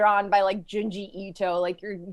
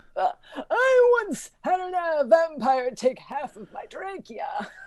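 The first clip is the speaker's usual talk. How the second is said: put-on very slow, swooping old man voice, strained throat; 8 semitones higher than usual. Voicing an old man in the bar whose trachea was bitten: old man voice damaged by vampire. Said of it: "he sounds like that 'cause he's like".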